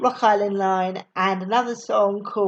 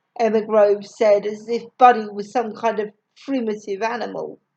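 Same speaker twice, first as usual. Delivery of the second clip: plain reading voice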